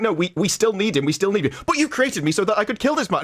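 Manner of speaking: really happy, bright, sing-song tone. Retelling a creepy scene with Cortana: imitating a really happy tone. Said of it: "she's saying it in this really happy tone of voice".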